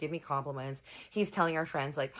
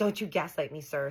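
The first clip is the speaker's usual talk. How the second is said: mock indignant, angry, mad, scolding tone. Speaker retells snapping at a man who denied checking out a girl: retelling an angry retort. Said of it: "So I'm like mad now".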